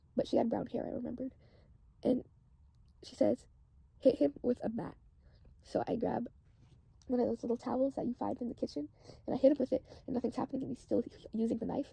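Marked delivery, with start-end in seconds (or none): none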